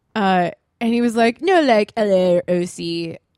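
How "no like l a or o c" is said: laid-back, very slow dude-bro drawl. Retelling a guy at a singles party asking where she lives: imitating a dude bro. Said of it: "he was so dude bro".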